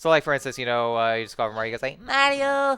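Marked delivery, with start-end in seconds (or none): 2.0-2.8 tiny, shrunken, very high-pitched squeak. Showing how the shrunken character calls out: imitating shrunken Luigi's high-pitched squeak. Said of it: "very high, high pitched squeak".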